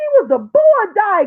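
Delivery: animated, high-pitched, swooping grandma voice. Addressing viewers, the speaker repeats a claim imitating grandma's voice. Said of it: "in my grandma's voice".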